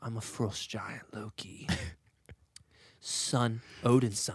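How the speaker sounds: hushed, breathy trickster-god voice, near whisper. Trading impressions, one speaker delivers lines as Loki: Loki impression. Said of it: "Loki is more like this".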